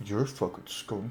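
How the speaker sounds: very quiet, grumbled under the breath. A player speaks as Thorn after another character's speech, muttering under his breath. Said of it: "Like under his breath".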